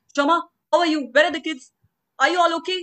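put-on frantic, alarmed voice. Retelling a neighbor uncle's phone call after an earthquake, mimicking a panicked neighbor. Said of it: "he was all panicked".

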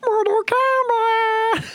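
high loud puppet voice. On a podcast, hyped about Mortal Kombat coming out, saying it in an Elmo voice. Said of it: "As stoked as Elmo saying".

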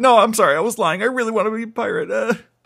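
very high-pitched, tearful, acted-out blubbering. Recapping a story, acting out Luffy's reply to Garp: imitating Luffy crying. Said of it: "Luffy starts crying like".

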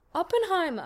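put-on German-accented name.

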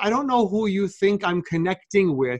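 ordinary talk

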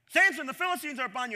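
sudden, loud, high-pitched shouted yell. Retelling a Bible story, as she wakes him: imitating someone yelling. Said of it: "she yells at him".

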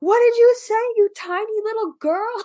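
mock shrill, very high, loud screaming. Recounting an anime scene where one character answers another, retelling a screamed retort. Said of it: "And Ed screams back".

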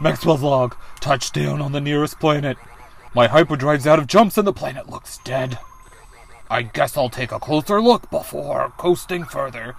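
put-on dog character voice. Playing a game demo, the speaker reads Maxwell's log in a dog voice. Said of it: "We need a dog voice".

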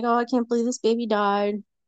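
mock grief-stricken, fake surprise. Retelling how she faked grief for the coroner: imitating fake surprised grief. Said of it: "she would act all surprised and grief-stricken".

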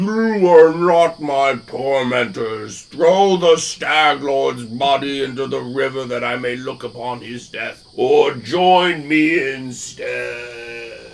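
eerie, waterlogged, ghostly undead calling voice. The game master voices a rotting dead man calling out across the river, eerie and soggy. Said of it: "calls out in an eerie, soggy voice".

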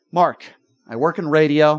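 ordinary talk, nothing marked

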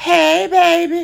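sweet, very high, creaky, nice tone. Describing a gossiping woman greeting people from her window: imitating Miss Sadie's nice hey. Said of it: "That's a nice hey, Miss Baby".

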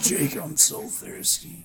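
hard-boiled, tough-guy noir brute voice. Retelling a sick brother at the top of the stairs: Mickey Rourke as Marv voice. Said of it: "He sounded like fucking Mickey Rourke playing Marv in Sin City".

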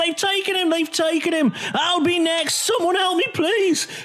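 very high, frantic, panicked screaming.

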